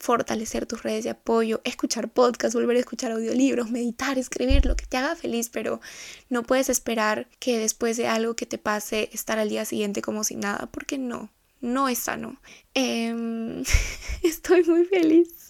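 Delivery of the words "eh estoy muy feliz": voice catching, very slow, breaking, drawn-out "eh". Addressing her listeners as friends, the speaker talks with voice breaking with emotion. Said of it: "con la voz entrecortada".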